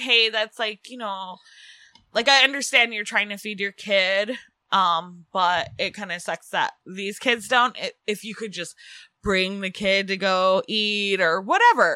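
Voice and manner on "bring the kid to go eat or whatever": ordinary talk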